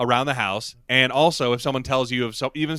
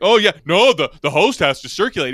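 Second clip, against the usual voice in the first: mock sarcastic delivery, higher and louder; 4 semitones higher, 5 dB louder than usual. Retelling what a character in the scene said: imitating a sarcastic tone. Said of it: "He says it sarcastically".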